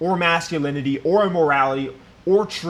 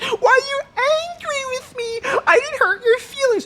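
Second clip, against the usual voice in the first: very high-pitched put-on woman's voice. Act out the woman who thinks she's talking to her girlfriend, imitating her voice. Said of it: "I have to try to do her voice".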